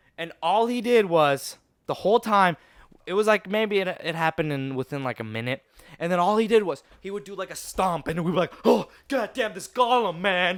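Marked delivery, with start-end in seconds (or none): 8.7-10.6 play-acted spooked, frightened outcry. Retelling a fight and the group's reaction: imitating being scared. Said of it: "then we'd be hella scared".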